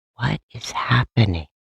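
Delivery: put-on whisper. Retelling a cast member's reaction: imitating Angie whispering. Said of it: "she whispers to herself".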